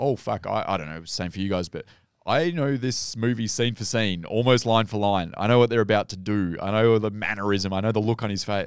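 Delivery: ordinary talk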